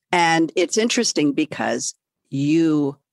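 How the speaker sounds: ordinary talk, nothing marked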